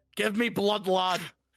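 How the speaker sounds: put-on Scottish brogue accent. Speaking in character to another player in the game: Scottish accent. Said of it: "I'm Scottish".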